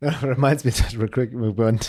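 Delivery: talking through laughter. Breaking off their own advice to share a memory, the speaker is laughing while talking. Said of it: "Sorry, I'm laughing".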